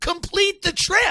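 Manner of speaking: shrill, very high shrieking scream. Retelling yelling at a driver in the middle of the street: imitating own screaming. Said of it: "I'm screaming".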